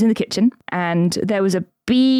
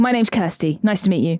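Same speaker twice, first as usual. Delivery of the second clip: confident, sure, firm, self-assured voice. Retelling meeting a celebrity and introducing herself: imitating own confident greeting. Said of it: "I really confidently say".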